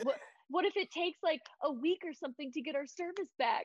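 high, worried, near-tearful voice. Retelling Jen's worry during a phone outage: imitating someone on the verge of tears. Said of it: "on the verge of tears 'cause she's like".

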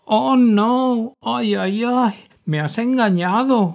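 very high, loud, terrified whimpering moan, no drawn out. Gussy answers Pillo's laughing reply, moaning, very frightened. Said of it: "gimió Gussy muy asustado".

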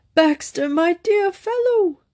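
very high tenor, strained, anguished, pleading. Narrator reads a man calling out to a former secretary, high voice in agony. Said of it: "A high tenor voice raised almost to A in an alto by agony of soul".

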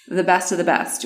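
ordinary talk, nothing marked

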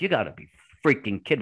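mock panicked, rushed, freaked-out disbelief. Retelling own reaction to news of a test show in four days: retelling own freaking out. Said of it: "I'm freaking out".

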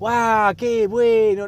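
over-the-top gushing, high, loud fake delight. Demonstrating how people react to each gift at baby showers: exaggerated gift-opening enthusiasm. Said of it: "aparte es con ese tono".

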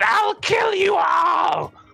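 very high, shrill, rough-edged, rasping enraged furious scream. Narrating Madam Mud Eye seeing her guard drakes hurt, screaming in anger. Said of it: "she screams out".

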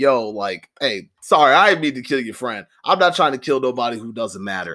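normal talking voice

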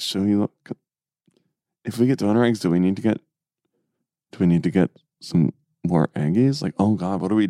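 put-on whisper. Retelling what the couple whispered to each other about donor eggs: imitating a whisper. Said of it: "whisper to each other".

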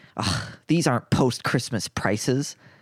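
mock scoffing female voice. Speaker retells a passing woman reacting to the baked goods, imitating her scoff. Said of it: "She kind of scoffs and she goes".

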